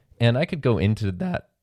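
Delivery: breaking voice, cracking mid-phrase. Talking to the audience in an episode about a media kit, voice cracking. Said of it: "My voice cracked".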